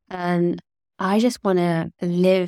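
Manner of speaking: ordinary talk, nothing marked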